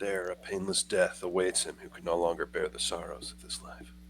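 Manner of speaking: low, quiet muttering under the breath. Recounting a scene where a man stands up and speaks, muttering. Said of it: "he mutters".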